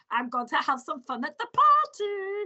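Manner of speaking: put-on German accent. Voicing a bear character, Mister Barista Bar, for listeners; Barista Bar's German accent. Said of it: "I have to put a German accent on him".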